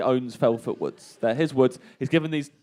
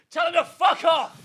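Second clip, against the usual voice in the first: mock loud crowd yell, much higher. Retelling a festival crowd answering Barry: imitating a really loud crowd shout. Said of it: "really loud".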